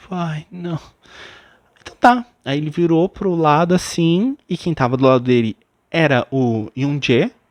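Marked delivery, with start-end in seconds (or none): 0.1-0.8 dismayed, desolate, crestfallen, let-down tone. Retelling a contestant's reaction to not being chosen: imitating someone desolate. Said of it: "ficou meio que desolado".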